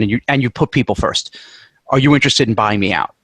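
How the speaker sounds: ordinary talk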